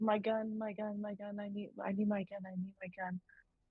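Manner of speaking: mumbled, muttered under the breath. Playing a character who keeps asking for her gun, muttering to herself. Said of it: "Kinda muttering to herself".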